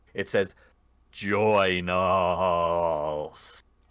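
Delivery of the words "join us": echoing, haunting ghostly voice, "us" drawn out. Narrating ghosts closing in and voicing them in a haunting spectral voice. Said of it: "in this like haunting spectral voice".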